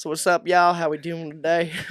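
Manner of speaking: casual, put-on Southern American accent. Describing the urge to sound Southern on camera: Southern American accent. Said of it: "adopt a southern accent".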